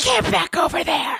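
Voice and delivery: high-pitched hissing voice. Retelling how the adult leader hissed at them before a question, imitating the hiss. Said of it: "she hissed at me".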